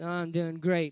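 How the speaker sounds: not-really-fine sound. Showing how teenagers sound when pretending to be fine: unconvincing 'i'm doing great'. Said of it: "unless you say it like this".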